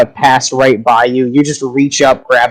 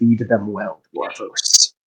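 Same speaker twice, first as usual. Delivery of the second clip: faint, barely audible, deep growling voice; 4 semitones lower, 9 dB quieter than usual. A storyteller voices a voice heard in a listener's head: faint deep growling voice. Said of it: "very faint but deep growling voice".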